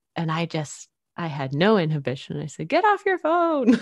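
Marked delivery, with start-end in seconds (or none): 2.7-3.8 mock, very high, uninhibited shouting. Retelling calling out to a younger driver on a cell phone: imitating own past yell. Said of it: "And just yelled".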